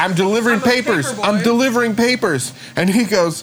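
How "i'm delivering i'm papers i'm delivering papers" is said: acted-out scream, tripping and stumbling over words. Retelling a man shoving a shotgun through the car window; retelling own past screaming. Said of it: "I'm literally screaming".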